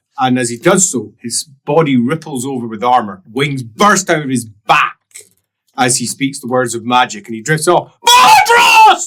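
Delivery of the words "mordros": very high, very loud bellowing shout. Voicing a winged figure calling out a name: shout. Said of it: "he shouts".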